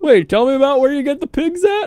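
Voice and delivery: way up high, eager fat-guy voice. Mocking someone's eager questions, imitating a fat guy at a buffet. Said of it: "He's like a fat guy who's, like, talking to the butcher at the buffet".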